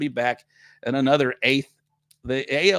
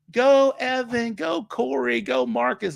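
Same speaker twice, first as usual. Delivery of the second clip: very high, very slow, shrill, drawn-out cheering; 11 semitones higher than usual. Retelling a woman beside him cheering each player by name, imitating a loud shrill fan. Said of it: "loud as shit with a just a shrill voice".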